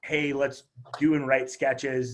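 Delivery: ordinary delivery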